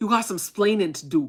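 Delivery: put-on New York Bronx accent. Joking that the army will come to the door: Bronx accent. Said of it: "In a Bronx accent".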